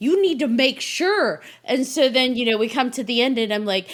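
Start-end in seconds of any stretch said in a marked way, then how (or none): 0.0-1.4 very high, sing-song, swooping, rising hollering. Retelling being a viewer watching a movie, retelling yelling at the screen. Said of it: "viewer yelling at my you screen".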